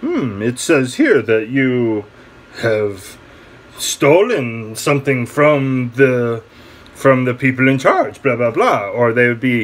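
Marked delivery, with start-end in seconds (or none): 0.0-8.9 put-on slight French accent. Retelling what police would write up in a statement, sounding French. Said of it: "sounded French there".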